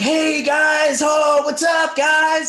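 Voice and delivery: mock super animated, very high, loud, drawn out. Retell a man greeting the guys on a hospital floor, imitating someone super animated. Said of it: "Like just like super animated".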